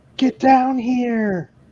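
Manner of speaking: loud, high-pitched screaming. Voicing a character calling the others down to the ship's hold: screaming. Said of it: "hear [name] screaming".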